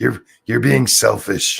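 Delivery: wicked, sinister, rough, creaky put-on evil voice. Quoting a judge in Texas scolding a hairstylist, in a put-on evil-sounding voice. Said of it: "I'm going with a evil sounding voice".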